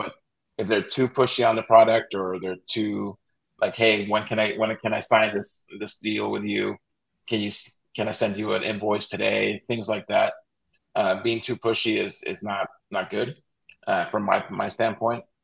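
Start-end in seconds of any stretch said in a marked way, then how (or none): none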